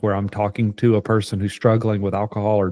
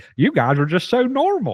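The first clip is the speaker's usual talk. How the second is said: put-on country accent, very high pitched and swooping; 9 semitones higher than usual. Teasing the co-host about the accent used on the last podcast: imitating a country accent. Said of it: "you did an accent on the last podcast too".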